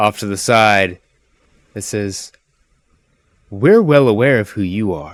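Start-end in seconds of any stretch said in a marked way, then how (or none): 3.5-5.1 dainty, delicate female voice. Narrator voices an elf woman calling out from the side: delicate female voice. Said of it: "a very delicate female voice".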